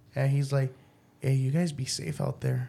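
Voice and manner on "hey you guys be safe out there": whispering voice. Retelling what an old ex-military client said: imitating someone whispering. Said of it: "kind of whispering".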